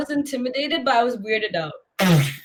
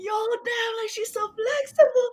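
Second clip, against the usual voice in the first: mock stunned gasp, very high-pitched; 10 semitones higher, 4 dB quieter than usual. Retelling classmates reacting as a girl passed the flexibility box: imitating gasping, amazed people. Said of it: "everybody's like gasping like".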